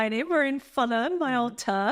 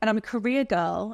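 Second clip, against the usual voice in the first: normal talking voice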